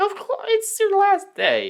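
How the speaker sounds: very high, slow, sarcastic mock-sentimental gush.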